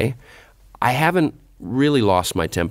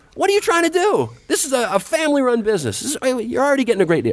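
re-enacted scream, much higher. Recalling losing it in line with a customer, the speaker retells screaming at her. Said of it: "I started screaming at this woman".

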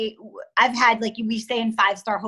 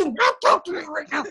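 demonic, possessed snarling voice, pitched up; 5 semitones higher than usual. Retelling a phone call with a son: imitating own exorcist voice. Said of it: "an exorcist voice".

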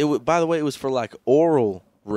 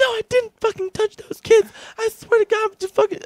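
very high, angry voice; 4 dB louder than usual. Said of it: "He was like".

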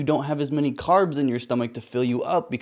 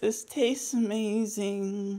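acted lifeless, half-dying monotone, slightly raised; 8 semitones higher, 6 dB quieter than usual. Reacting to a keto recipe, imitating the woman's dying-sounding delivery. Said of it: "Why does she sound like she's dying?".

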